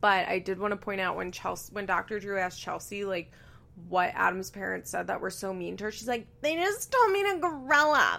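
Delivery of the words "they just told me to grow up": grating put-on baby voice, high and slow. Retelling what was said at the reunion, imitating Chelsea's awful baby voice. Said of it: "in that awful baby voice".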